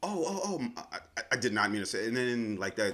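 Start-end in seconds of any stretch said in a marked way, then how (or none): 0.1-1.9 put-on cracking voice, pitched higher. Imitating people caught out for crazy talk: imitating a voice cracking. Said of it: "the voice start cracking".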